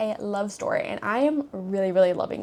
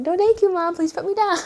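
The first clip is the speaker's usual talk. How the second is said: raised, pitched-up polite pleading voice; 7 semitones higher, 6 dB louder than usual. Voicing Dennis, who crept up behind and refuses to say hi: voicing Dennis. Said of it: "He's like".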